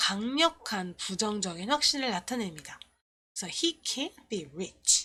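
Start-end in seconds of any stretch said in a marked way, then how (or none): 3.5-5.1 can't hit hard and firm, heavily stressed. English lesson on a sentence of strong negative certainty: stress on can't. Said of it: "can't라는 펑션 워드에 강세가 가게 되죠".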